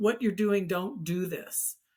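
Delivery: normal talking voice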